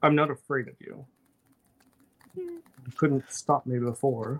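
echoing, ominous creature voice with swooping pitch. Voicing a creature answering players in a tabletop game; echoing ominous voice. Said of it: "it has like this echoing ominous voice and it's like".

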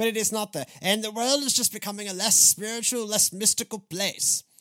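jokey put-on British accent. Mid-talk, slipping into a British accent because it's funny. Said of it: "I don't know why I'm doing the British accent".

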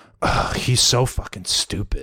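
slow mutter under the breath. Retelling what someone muttered to herself in the bathroom: imitating a mutter. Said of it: "she mutters to herself".

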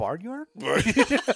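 soft, gentle call with questioning tone. Retelling how a man called a name instead of yelling, imitating a questioning call. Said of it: "instead of just yelling, he was all".

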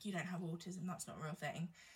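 mock muttering under breath. Speaker retells what a man said during an argument walking to the car park: retelling a mutter under breath. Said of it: "he just said under his breath".

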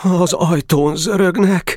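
trembling, high-pitched, quavering voice. Kolna speaks to the boys as knocking sounds at the gate: trembling voice. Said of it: "mondta reszkető hangon Kolna".

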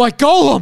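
distraught upset cry. Retelling a grown man's reaction when his figure fell: imitating a distraught man. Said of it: "he's just picked it up and he's, like, shaking".

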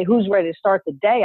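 normal talking voice

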